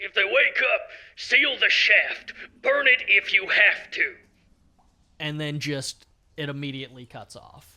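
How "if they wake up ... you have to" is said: very loud, staticky, crackling radio transmission voice. Speaker plays the voice crystal's message to the group, in a crackling radio voice. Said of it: "you would hear crackling radio voice as it just says".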